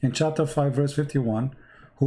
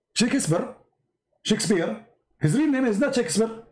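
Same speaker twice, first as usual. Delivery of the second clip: pitched-up, proclaiming head of state voice; 8 semitones higher than usual. Act out what Gaddafi said about Shakespeare's real name, in a Gaddafi impression. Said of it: "You should see Al Qazafi when he said".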